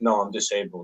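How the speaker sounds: calm, soft, even and kindly tone. Telling how she answered a yelling woman about a mask, retelling a calm reply. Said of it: "I said it in a calm voice".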